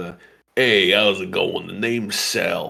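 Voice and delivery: talking out of mouth's side. Explaining the faces made while doing voices, demonstrating one: talking out of one side of mouth. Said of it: "I kind of like talk out of one side of my mouth".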